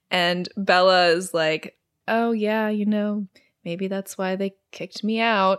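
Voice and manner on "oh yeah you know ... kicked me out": put-on toneless, dead-flat, level monotone. Retelling a scene, the speaker gives Bella's reply to a classmate very monotone. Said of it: "Just like very monotone".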